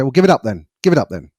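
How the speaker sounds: quick, mildly passive-aggressive, dismissive delivery. Demonstrating a persecutor's response to someone learning golf, a bit passive-aggressive. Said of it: "a bit passive aggressive".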